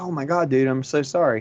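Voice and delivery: normal talking voice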